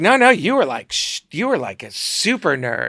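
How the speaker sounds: campy, swooping drag-queen style voice. Speaker retelling what a woman said to them, talking like a drag queen. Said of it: "this woman who talks like a drag queen".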